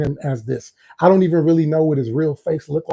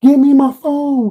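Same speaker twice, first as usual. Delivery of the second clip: very high, shrill sobbing scream with crying; 10 semitones higher, 6 dB louder than usual. Retelling a phone call, voicing the girl heard in the background, retelling screaming and crying. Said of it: "screaming and crying".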